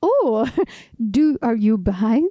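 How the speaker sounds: put-on French accent in English. Retelling what a hiker's father asked, imitating him with a french accent. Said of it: "imagine a French accent".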